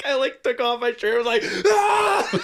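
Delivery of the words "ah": very high, loud, unhinged scream. Retelling fighting off four attackers who tried to steal: imitating his own scream. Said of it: "I just started screaming".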